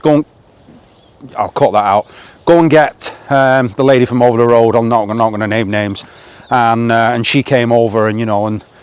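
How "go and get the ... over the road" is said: ordinary delivery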